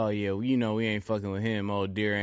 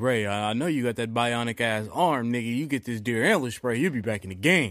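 usual speaking voice

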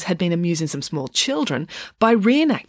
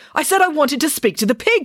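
curt, shrill, very high-pitched snapping tone; 10 semitones higher, 4 dB louder than usual. Reading a story aloud, the doctor demanding to see the pig: snapping. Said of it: "snapped the doctor".

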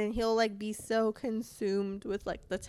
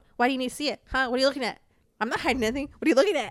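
mock defensive voice, louder; 3 semitones higher, 6 dB louder than usual. Imitating how he'd react if she were on his phone, imitating him being defensive. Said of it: "he'd be like".

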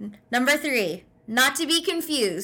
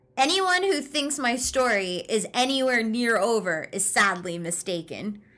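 usual speaking voice

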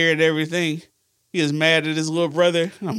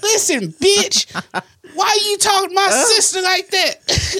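put-on very high voice of a twelve-year-old; 4 dB louder than usual. Retelling telling off his sister's caller at twelve, in a high-pitched twelve-year-old voice. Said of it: "High ass fucking voice".

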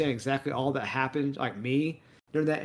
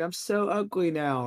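tearful, drawn-out, very slow crying voice; 4 semitones higher than usual. Retelling a scene from Barbie where she cries: imitating Barbie crying. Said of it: "she's supposed to be crying".

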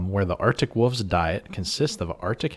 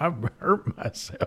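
high, mocking put-on US Southern accent; 8 semitones higher than usual. Teasing another speaker by repeating their line: mocking Southern accent. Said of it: "start talking like a U S Southerner".

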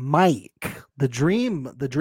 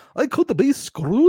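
high, loud, near-Norwegian accent; 10 semitones higher, 5 dB louder than usual. Discussing a show, repeating a character's line in a Norwegian-sounding accent. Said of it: "It's getting more Norwegian almost".

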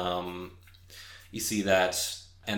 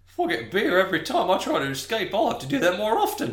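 much higher, fast, laughing, giggling voice.

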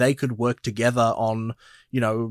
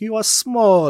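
very high, loud, put-on Italian accent; 10 semitones higher, 5 dB louder than usual. Recalling a mum character from a film: imitating an italian mum's accent. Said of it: "with the, the accent".

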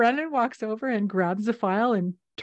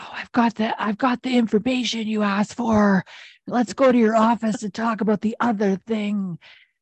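half-whispered stage aside. Retelling a scene where one character half-whispers to another: imitating Booth half-whispering. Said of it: "Booth whispers to Brennan".

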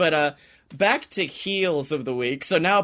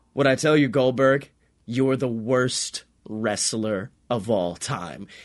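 strongly exaggerated taunting delivery; 6 semitones lower than usual. Retelling a wrestler's video taunting another wrestler: imitating Matt Riddle taunting. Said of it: "the video where he was like".

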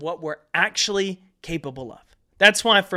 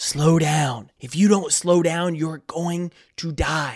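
put-on whispering voice; 2 semitones lower than usual. Describing a tough workout, acting out the inner voice: imitating a whispering inner voice. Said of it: "that little voice in the back of your head start whispering".

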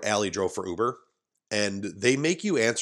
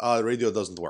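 bad put-on Middle Eastern accent with broken English. Speaker quotes the man driving their van, horrid Middle Eastern accent. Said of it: "That's a horrid accent".

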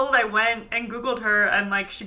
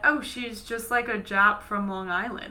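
usual speaking voice

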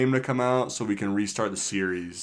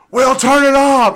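very loud, shrill, very high yell; 13 dB louder than usual. Retelling how she yelled at us while we played a game, retelling her yelling. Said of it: "she's like yelling at us".

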